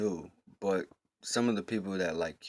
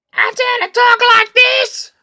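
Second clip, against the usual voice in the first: hyper made-up silly voice, higher and louder; 20 dB louder than usual. Showing one of the different voices used when hyper: hyper put-on voice. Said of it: "I'll do one for you right now".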